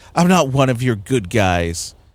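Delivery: put-on condescending tone. Retelling a film line, mocking its delivery: condescending Bruce Wayne line. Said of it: "he says it so condescendingly".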